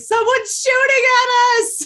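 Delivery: very high, shrill, loud panicked scream. Acting in a tabletop game while being shot at: screaming in character. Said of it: "I'm just screaming".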